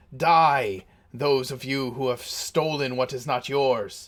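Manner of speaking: maniacal shouting. Game master voices a spellcasting enemy addressing the players, shouting maniacally. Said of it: "at the top of his lungs maniacally".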